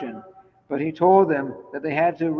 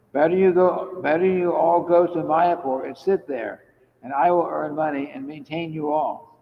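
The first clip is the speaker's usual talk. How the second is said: normal talking voice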